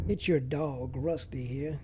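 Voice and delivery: American accent in a talking dog voice. Trying out an intro voiced as the dog: American accent as Rusty. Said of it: "in an American accent like the dog".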